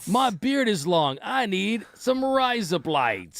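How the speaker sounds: put-on Australian accent. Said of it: "Teach me the Australian again".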